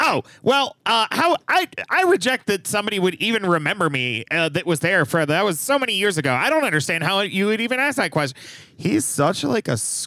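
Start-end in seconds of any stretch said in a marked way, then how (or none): 0.0-8.4 smarmy, squirmy, higher-pitched voice. Retelling a politician's answer to a journalist: imitating Ron DeSantis, smarmy. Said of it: "the most smarmy way possible".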